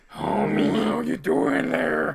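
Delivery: husky, raspy, smoky voice with a slow drawl. Imitating an actress's line from a trailer: raspy smoky voice. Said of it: "a raspy, kinda, like, smoky voice".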